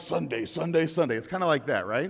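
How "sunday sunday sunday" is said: monster truck rally announcer voice. Comparing hype voices, doing the monster truck rally announcer voice. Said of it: "like the monster truck rally guy".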